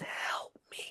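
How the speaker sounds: silently mouthed words. A player's character mouths words to a crying girl, silently mouthing the words. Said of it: "I would like to just mouth the words".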